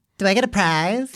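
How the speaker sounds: high, put-on girl's voice. Reading aloud a woman's message while playing her part; put-on girl's voice. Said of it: "The voice".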